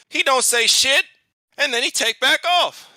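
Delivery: screeching voice.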